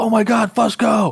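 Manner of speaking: very slow, high-pitched, drawn-out yell. Retelling how the other speaker called from another room: imitating someone yelling. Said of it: "you yelled to me".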